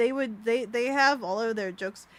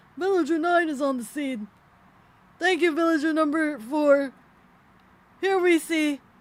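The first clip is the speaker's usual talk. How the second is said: oddly passive, low-key yell, pitched up; 5 semitones higher, 4 dB louder than usual. Showing how the villagers sound when they shout, villager yelling in lowercase. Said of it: "Villager yelling in lowercase".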